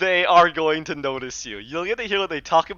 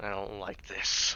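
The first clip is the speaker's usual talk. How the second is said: very guttural, throaty, commanding whisper; 9 semitones lower, 12 dB quieter than usual. Voicing a commander in a story being narrated, very guttural voice. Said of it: "he says in a very guttural voice".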